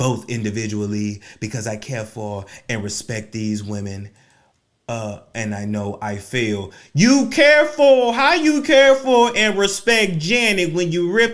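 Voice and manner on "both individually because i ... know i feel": formal, read-aloud public statement delivery. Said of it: "let me use my [name] voice".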